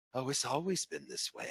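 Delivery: eerie, hushed, creepy whispered woman's voice. Telling listeners about a woman's creepy reply, the speaker is imitating a creepy woman. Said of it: "I'm going to try to imitate her".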